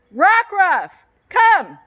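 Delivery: very high, swooping, sing-song yell. Calling a wandering dog back in the backyard: yelling. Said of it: "I'm gonna have to yell".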